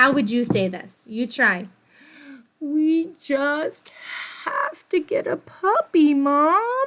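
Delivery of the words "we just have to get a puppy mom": mock, very slow, high, drawn-out pleading. Showing how a daughter asks her mom for a puppy, pleading tone. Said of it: "Are you pleading? ... That's what my daughter sounds like".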